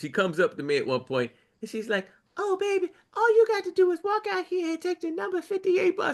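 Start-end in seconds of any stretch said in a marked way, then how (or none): 2.4-6.2 put-on very high, sweet little old lady voice. Retelling what an old lady security guard told the speaker: imitating a sweet old lady. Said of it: "the sweetest little old lady security guard".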